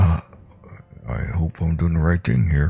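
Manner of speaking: hushed whisper from mouth's side. A player character, winking at another character, speaks aside in a quiet whisper. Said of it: "I quietly whisper".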